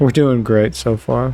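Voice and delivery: said sarcastically. Speaker in a hard fight, down to nine hundred health, comments sarcastically. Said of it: "I say sarcastically".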